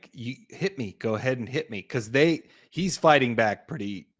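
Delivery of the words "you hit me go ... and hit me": normal talking voice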